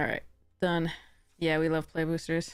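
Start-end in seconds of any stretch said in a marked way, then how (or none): 1.4-2.5 sarcasm laid on thick, dripping. Reacting after looking at an opened deck: dripping with sarcasm. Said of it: "said [name] sarcastically, with the sarcasm dripping".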